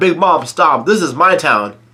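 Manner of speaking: usual speaking voice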